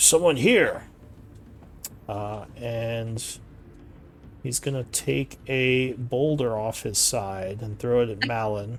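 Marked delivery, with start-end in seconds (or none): 0.0-0.8 high-pitched giant voice, shouting and yelling. A game master voices a fire giant who spots Malin and Uslag, yelling. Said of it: "he will see Malin and Uslag with your stealths and yell".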